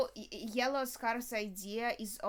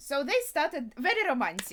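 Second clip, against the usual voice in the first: heavily sarcastic, raised and louder. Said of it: "that's sarcasm".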